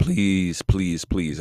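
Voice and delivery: voice breaking and cracking on repeated words. Speaking directly to listeners, the speaker pleads with them: voice cracking. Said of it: "as my voice cracks there".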